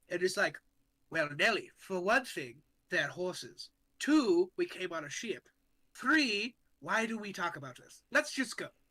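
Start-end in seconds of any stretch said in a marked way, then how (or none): 1.1-8.6 condescending, mocking tone, as if talking to a child. Retelling what they said to Nellie, the speaker uses a very mocking tone, like talking to a child. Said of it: "in like a very mocking tone, like I'm talking to a child".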